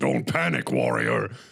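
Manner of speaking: very low, deep, rough, rasping growl. Retelling what Thrall said while the car shuddered: Thrall voice. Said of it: "And Thrall's going".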